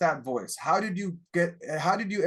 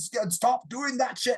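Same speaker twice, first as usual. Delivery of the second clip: put-on Scottish accent, slow, pitched-up, scolding tone; 6 semitones higher than usual. Recommending an audiobook, the speaker quotes its narrator: imitating a yelling scottish man. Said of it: "have this Scottish guy yelling".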